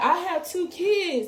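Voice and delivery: put-on, high, drawn-out, stretched-out screaming. Retelling what a woman screamed after being cut: imitating someone screaming. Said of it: "she's screaming like".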